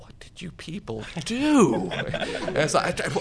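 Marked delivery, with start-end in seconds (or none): 0.0-1.9 mock mournful kicked-puppy voice, very high. Recalling the hotel man who spoke to them as they left: imitating a sad, kicked-puppy voice. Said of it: "in this very sad, kicked puppy voice".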